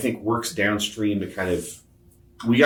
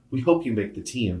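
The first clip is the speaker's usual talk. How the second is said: teasing, tongue-in-cheek, dry, sarcastic joking tone; 2 semitones higher than usual. Retelling what a wife said jokingly on the drive: imitating a sarcastic joke. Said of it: "jokingly and sarcastically goes".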